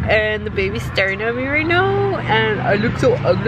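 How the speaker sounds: ordinary talk, nothing marked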